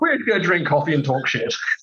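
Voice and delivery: ordinary talk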